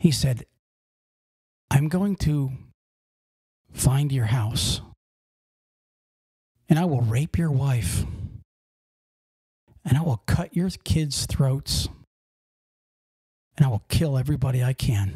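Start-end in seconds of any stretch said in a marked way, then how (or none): 1.7-15.2 very calm, unangry speech. Retelling the guy's words to the company president: imitating a very calm manner. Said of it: "He said it in a very calm manner".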